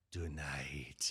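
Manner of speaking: put-on loose, sort of Spanish accent. Imitating the other speaker's episode opener: Antonio Banderas accent. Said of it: "in a sort of Spanish accent".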